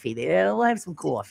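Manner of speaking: put-on New York accent. Discussing how people pronounce coffee, demonstrating a New York accent. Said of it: "New York City coffee".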